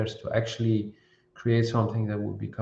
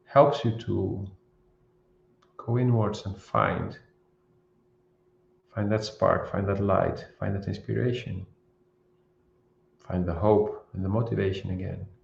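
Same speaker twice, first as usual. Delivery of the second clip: speaking very slowly, pausing often. Speaker guiding viewers through a self-reflection video, very slow with many pauses. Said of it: "I've been speaking very slow, with a lot of pauses".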